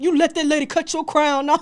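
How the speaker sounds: very loud, high, belted dad voice. Retelling a friend's dad scolding about a haircut: made-up Mufasa-style voice for a friend's dad. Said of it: "this is when your dad was like".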